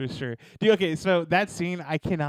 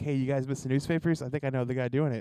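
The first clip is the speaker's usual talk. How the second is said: ordinary talk, nothing marked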